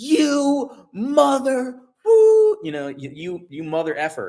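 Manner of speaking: mock shrieking scream. Telling viewers about a man who huffed and puffed at him, retelling a banshee-like scream. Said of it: "he screamed it like a banshee".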